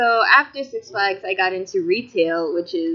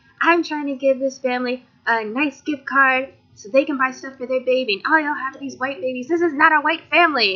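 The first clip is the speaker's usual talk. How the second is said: put-on, high-pitched, angry ranting tirade; 6 semitones higher than usual. Retelling how a customer complained to the manager: imitating a customer going off. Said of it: "she's just going off".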